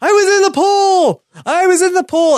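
screamed out very high-pitched, desperate and loud. Retelling a sitcom scene, imitating George Costanza screaming. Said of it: "screams a very famous Seinfeld line".

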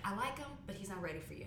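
normal talking voice

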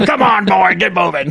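put-on grizzled old coach voice, barking, rough and creaky. Imagining a trainer yelling at a marble athlete: grizzled old trainer voice. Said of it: "an old grizzled marble that comes out and, like, becomes this trainer".

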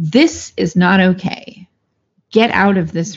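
mock-stern, very stern acted delivery. Speaker retells what she said to someone yelling at her, very sternly. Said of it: "And when I very sternly would say".

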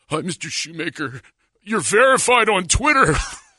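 acted jittery, starstruck, nervous, high teenage kid voice. Retelling a teenager at his son's volleyball game greeting him; imitating a nervous kid. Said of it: "He's all nervous".

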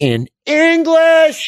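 shrill, very high-pitched, loud scream. Recapping a tense scene from the show: Sun screaming. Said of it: "Sun screams".

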